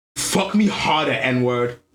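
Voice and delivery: raw, primal, most aggressive voice. Retelling what Shorty said in bed: imitating Shorty's aggressive tone. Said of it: "In the most like aggressive tone".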